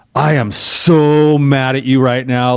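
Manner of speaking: drawn-out, deliberate, very slow mumble. Retelling his wife's words to him as a panhandler walks alongside, imitating a mumble under breath. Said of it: "my wife mumbled under her breath".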